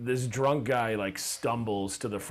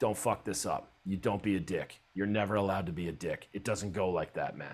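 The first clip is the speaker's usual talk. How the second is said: put-on serious tone. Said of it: "And he got all serious".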